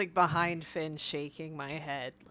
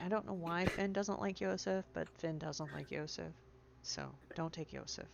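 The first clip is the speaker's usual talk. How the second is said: very quiet, discreet, confidential aside; 7 dB quieter than usual. Quietly warning the bugbear in character: very quiet in character. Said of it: "very quietly".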